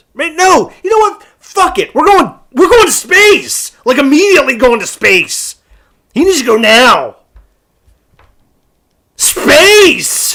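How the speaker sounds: excited, drawn-out, high swooping yell. Answering whether to send him to space, yelling excitedly. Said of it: "I'm yelling space over here".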